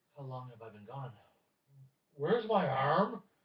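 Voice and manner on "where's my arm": voice suddenly raised, very loud and high. A freed captive demands to know what happened, with a raised voice. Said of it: "As he actually raises his voice with that one".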